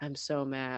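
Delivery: drained, low, flat, exhausted, energyless monotone. Imagining saying you're mad while exhausted: flat, exhausted monotone. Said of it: "I already am monotone, and then being exhausted, it would just be like".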